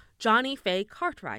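put-on plummy, posh upper-class British accent. Saying the name again when challenged to say it another way, British accent. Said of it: "so she's British?".

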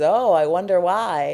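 put-on playful, joking voice. Retelling a man's reply on hearing a joke would be cut, imitating a joking reply. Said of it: "like jokingly".

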